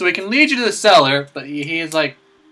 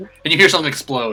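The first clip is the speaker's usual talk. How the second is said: normal talking voice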